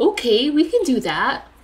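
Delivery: teasing, mocking parody of someone's delivery. Telling the other speaker he did sound like that, then mimicking him: mocking impression. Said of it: "you did sound like that".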